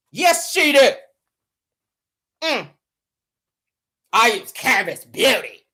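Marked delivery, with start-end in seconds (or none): 4.1-5.5 mocking deep voice, lower pitch. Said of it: "That deep ass voice".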